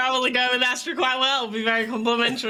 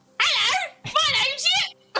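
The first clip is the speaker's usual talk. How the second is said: very high, squeaky, dumb silly voice. Imagining how the elegant dragon finally speaks, in the dumbest voice for Yip. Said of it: "expecting like the dumbest fucking voice".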